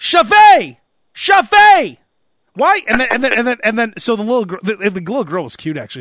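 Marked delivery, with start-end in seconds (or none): 0.0-2.8 mock yelling, higher, louder, slower. Retelling a scene in a long line, the speaker mimics a mother yelling at her daughter. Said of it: "she kept trying to make a scene".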